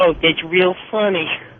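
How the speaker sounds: put-on disgusted tone. Retelling a voice in the background after the speaker rear-ended a taxi, imitating a very disgusted voice. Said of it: "you hear this very disgusted voice in the background".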